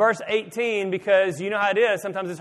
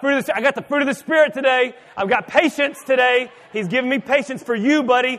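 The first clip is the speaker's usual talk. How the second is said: mock yelling, loud and high; 5 semitones higher, 5 dB louder than usual. Speaker acts out how a man yelled back at an angry neighbor: retelling a yell. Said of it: "starts yelling at the guy".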